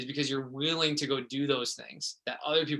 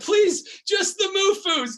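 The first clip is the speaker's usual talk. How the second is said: very high-pitched, slow, drawn-out, desperate begging; 9 dB louder than usual. Retelling trying to sell books on hands and knees: imitating own desperate pleading. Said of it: "just desperate".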